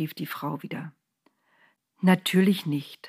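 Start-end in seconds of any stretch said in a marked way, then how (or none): 2.0-3.1 very gentle, soft-spoken, tender. Narrator reads the angel answering the woman, very gently. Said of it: "sagte der Engel so sanft".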